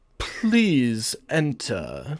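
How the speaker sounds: smooth, suave voice. Narrating the game, voicing the captain answering the players' knock: suave captain voice. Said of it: "the captain's suave voice".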